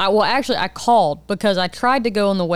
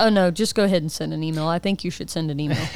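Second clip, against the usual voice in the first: normal talking voice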